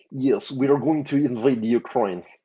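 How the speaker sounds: put-on Russian accent. Asked for a little Putin, answering in a put-on Russian accent. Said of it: "I could do an incredible Russian accent".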